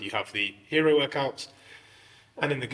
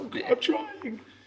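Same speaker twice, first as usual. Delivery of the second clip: put-on very high, slow crying whimper like a kid. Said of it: "memories of your parents shouting at you".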